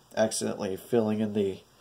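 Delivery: ordinary delivery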